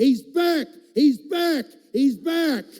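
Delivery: loud, high, repeated yelling at the top of lungs. Telling a story of a woman running toward the kitchen: retelling a yell at full voice. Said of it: "she's yelling at the top of her voice".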